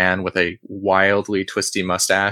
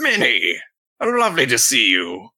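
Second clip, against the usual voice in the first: put-on old adventurer voice, higher pitch; 4 semitones higher than usual. Voicing an old explorer greeting Minnie: voicing an old explorer. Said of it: "the guy looks over at Minnie and says".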